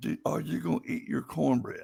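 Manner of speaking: put-on whisper. Speaker retelling someone at dinner asking about cornbread, retelling a whisper. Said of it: "they whispered".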